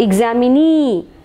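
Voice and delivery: stress on final syllable nee of examinee. Explaining word stress in examinee, stress on last syllable nee. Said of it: "Nee is given more stress".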